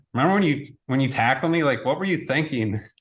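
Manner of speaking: usual speaking voice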